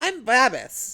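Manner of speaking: loud, cheery, high-pitched voice. The game master voices the carriage driver introducing himself, in a cheery voice. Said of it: "he says with a cheery voice".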